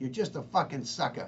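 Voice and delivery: put-on thick, heavy New York accent with R dropped. Retelling what a woman said to him, heavy New York accent. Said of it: "she said it in her heavy New York".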